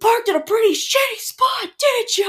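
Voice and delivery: loud, very high accusing shout. Retelling a man who came over after the sled flipped, retelling an accusing yell. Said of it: "he's like yelling at us".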